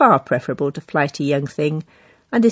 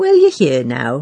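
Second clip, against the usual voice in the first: sweetly smiling tone, louder; 4 dB louder than usual. Muriel replies to the narrator arriving late at the office, smiling sweetly. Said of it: "Muriel smiled sweetly".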